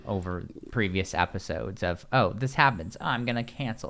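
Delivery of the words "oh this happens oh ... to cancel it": ordinary talk, nothing marked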